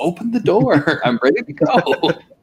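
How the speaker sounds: high, stretched-out yelling. Retelling how they yelled at the TV to open the door: imitating own yelling at TV. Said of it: "yelling at the T V".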